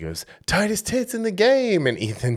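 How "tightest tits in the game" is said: mock shrill, very high yelling shout. Retelling what a guy behind them yelled at a wrestler: imitating a fan yelling. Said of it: "one of the guys behind us yelled at Ethan".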